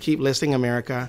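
nasal public-radio host style read. Showing how a radio host would sign off: Ira Glass impression. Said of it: "Ira Glass would say it like".

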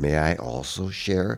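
very quiet, hushed, slow, unhurried delivery. Retelling a rehearsal, quoting a voice from behind: Aaron Copland's very quiet voice. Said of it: "a very quiet voice right behind".

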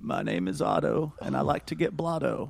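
mellow, gravelly, gentle voice. Trying the impression again after worrying it was too yelly: really mellow Otto impression. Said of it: "that's my Otto impression".

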